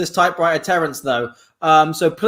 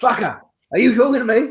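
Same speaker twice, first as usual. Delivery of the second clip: put-on British accent, pitched a touch higher; 5 semitones higher than usual. Doing a British version of Robert De Niro for the others: British Robert De Niro impression. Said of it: "I'm British, Robert De Niro".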